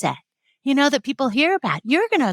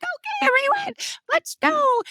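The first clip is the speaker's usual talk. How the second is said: high, squeaky, jittery voices from a group; 13 semitones higher than usual. Retelling own first virtual training while nervous: imitating own high squeaky voice. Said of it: "my vocal cord got really high".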